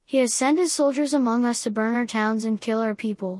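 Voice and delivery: ordinary talk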